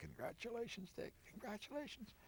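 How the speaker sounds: put-on, worn-out, hoarse whispering voice. Retelling a congratulatory call after winning the nomination: imitating Nelson Rockefeller's hoarse voice. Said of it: "His voice is very hoarse".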